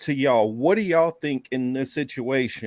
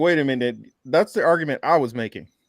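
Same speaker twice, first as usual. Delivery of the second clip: ordinary talk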